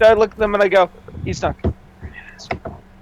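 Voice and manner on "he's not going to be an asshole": very quiet, barely voiced whispered aside. Speaking in character, whispering a line to another character: whispering. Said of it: "whisper at him".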